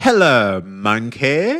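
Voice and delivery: sing-song character voice with wide pitch swoops. Joking that someone thinks he's Frieza, doing a Frieza impression. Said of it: "that was my best Frieza impression".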